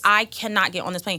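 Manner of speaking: ordinary delivery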